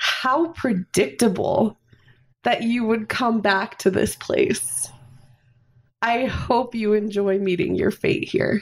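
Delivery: scornful, gloating, sneering ghost voice. Voicing a ghost who floats out of the shadows at the group: sneering. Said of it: "he sneers at you guys".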